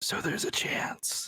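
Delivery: quiet, hushed whisper. Telling friends about looking over at Blard and Beale, retelling a whisper. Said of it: "I just whisper".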